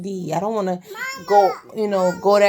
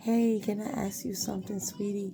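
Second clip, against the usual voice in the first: mock courteous, polite, respectful man's voice; 13 dB quieter than usual. Imitating respectful men approaching to chat: imitating a polite man. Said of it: "they're very polite".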